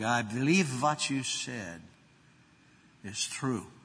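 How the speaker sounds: thick Irish brogue, laid on heavy. Retelling what a first-time visitor said to him in the foyer: strong brogue. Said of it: "He said in a strong brogue".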